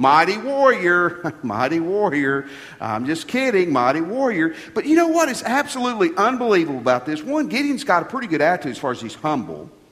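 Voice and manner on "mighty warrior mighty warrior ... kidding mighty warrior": mocking, slow, sarcastic drawl. Acting out the angel's greeting to Gideon: acting out sarcastic smirking. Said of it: "I think he was being sarcastic".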